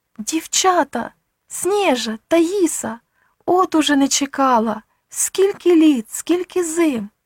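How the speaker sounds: high, drawn-out, bewildered and flustered exclamation. An elderly woman stops just short of her door and calls out: flustered exclamation. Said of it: "розгублено вигукнувши".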